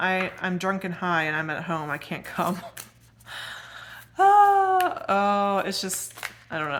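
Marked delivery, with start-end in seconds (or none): 4.2-6.8 loud laughing breaking up words, drawn-out oh. Telling a story about a friend who didn't show up, laughing while talking. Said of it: "I'm not sure why I'm laughing".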